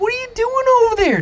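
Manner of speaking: very high, fast, incredulous squeal.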